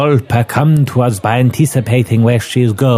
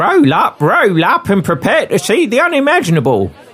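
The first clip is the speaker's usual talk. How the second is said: very high, put-on Cockney accent; 9 semitones higher than usual. Voicing a character said to have a Cockney accent: Cockney accent. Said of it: "With a young female Cockney, accent".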